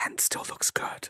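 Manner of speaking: soft, close ASMR-style whisper. A streamer speaking to the stream, in an ASMR whisper. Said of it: "Welcome to Key A S M R".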